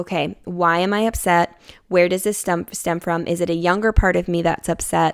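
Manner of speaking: plain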